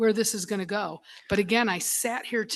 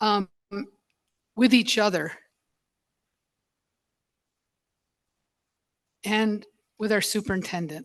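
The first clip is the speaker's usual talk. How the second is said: emotional, choked-up voice, catching and breaking. A speaker partway through remarks, getting choked up. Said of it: "Sorry, I'm getting choked up".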